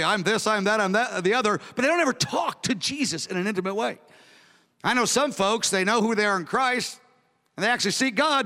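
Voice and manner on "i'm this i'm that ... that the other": ordinary talk, nothing marked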